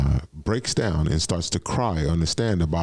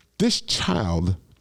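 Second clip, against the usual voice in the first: ordinary talk, nothing marked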